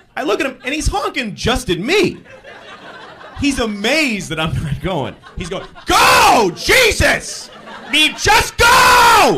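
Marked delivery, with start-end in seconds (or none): 5.9-9.4 very high, very slow, drawn-out shrill scream. Retelling how the driver behind screamed out his window, retelling a scream. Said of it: "Screaming out his window at me".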